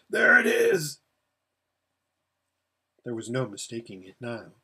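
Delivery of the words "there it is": very high, dry, parched barking shout. Reading a story aloud, a thirsty rider spotting the valley: dry barking shout. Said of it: "in the strange barking voice of someone whose mouth is perfectly dry, shout out".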